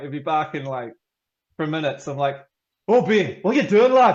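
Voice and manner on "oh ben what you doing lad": put-on high, loud Scottish accent. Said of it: "put on my Scottish accent".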